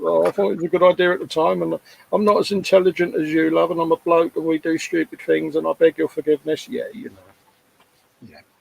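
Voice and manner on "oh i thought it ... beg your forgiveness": high, meek, wimpy grovelling tone. Retelling own apology while staring at his feet: imitating a meek wimpy apology. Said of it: "I wimped out totally".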